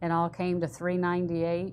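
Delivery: ordinary delivery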